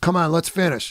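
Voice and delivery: ordinary talk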